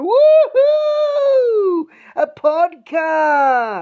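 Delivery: very high, swooping, over-the-top fake excited cheer. Urging the co-host to be more enthusiastic about the podcast; excited cheer. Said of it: "Be more enthusiastic".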